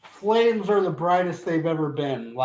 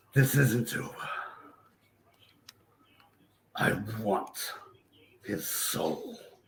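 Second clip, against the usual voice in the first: hushed, whispered voice; 7 semitones lower, 7 dB quieter than usual. Narrating to a player, voicing the voice inside their head. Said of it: "you hear that voice inside your head says".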